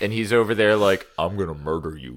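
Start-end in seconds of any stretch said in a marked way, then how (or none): 1.2-2.2 super deep, dropped voice. Joking about an alternate-Earth wrestler: super deep Brock Lesnar voice. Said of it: "Earth two Brock Lesnar has a super deep voice".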